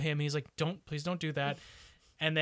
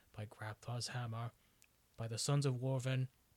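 mock grave dramatic delivery, lower and quieter; 4 semitones lower, 7 dB quieter than usual. Retelling a movie's long-avoided line: Alan Rickman gravitas. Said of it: "he says it with the Alan Rickman gravitas".

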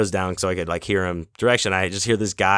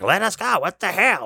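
mock, very high, demanding, hollered yell; 11 semitones higher than usual. Retelling how a guy in line yelled at the gate guard: imitating someone yelling. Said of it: "yelling at him".

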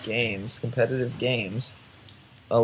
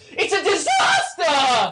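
high, slow shout with a voice crack. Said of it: "this is the best Toby Wan quote, and it's gonna be kinda loud".

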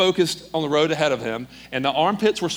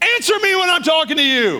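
very high-pitched, loud, furious top-of-the-lungs yell; 12 semitones higher, 5 dB louder than usual. Retelling a cop yelling at a speeding driver, retelling a cop's yell. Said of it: "He yells at the top of his lungs".

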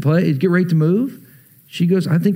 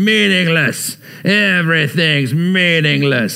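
put-on worn-out, weary old man voice; 2 semitones lower than usual. Showing how younger readers hear Ecclesiastes: put-on weary old man voice. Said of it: "you can read it this way. It sounds like an old man on a rocking chair on the porch going".

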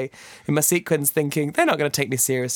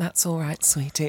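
put-on soft asmr voice, quieter; 4 dB quieter than usual. Retelling an ASMR video her boyfriend watches: imitating ASMR Nurse Jessica. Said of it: "she's like".

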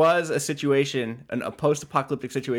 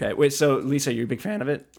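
voice breaking and cracking partway through. Asking another speaker if she is a fan of the show, voice cracking. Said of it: "did my voice just crack?".

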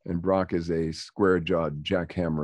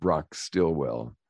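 ordinary talk

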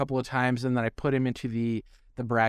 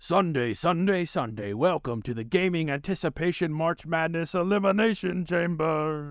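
monster truck commercial pitchman announcer voice; 4 semitones higher than usual. Host introducing a surprise march madness game: monster truck announcer voice. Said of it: "let me get my monster truck voice on".

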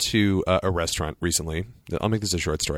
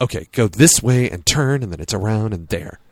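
put-on condescending, miffed, put-out tone, voice raised; 6 dB louder than usual. Speaker imitating a woman giving restroom directions: mimicking a miffed tone. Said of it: "Her tone was very miffed".

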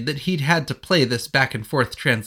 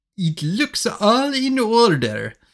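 stiff, slow, poorly put-on French accent; 7 semitones higher than usual. Reading a story aloud, voicing a man who finally speaks english, in a bad french accent. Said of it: "I don't think that's a great French accent".

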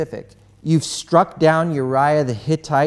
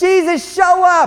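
very high, shrill, loud screaming plea; 7 dB louder than usual. Acting out people screaming for Jesus with eyes closed: imitating someone screaming. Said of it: "we're screaming with our eyes closed for Jesus".

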